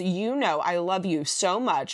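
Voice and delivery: ordinary talk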